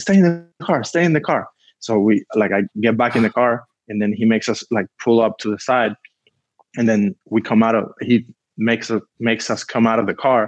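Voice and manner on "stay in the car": put-on shout, much higher, slower. Retelling how a man with a gun ordered them to stay in the car, retelling a yell. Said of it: "he starts yelling".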